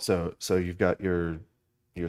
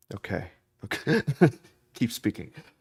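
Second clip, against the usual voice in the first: laughing, higher, louder, amused eager voice. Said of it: "because I'm like".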